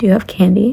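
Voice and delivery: plain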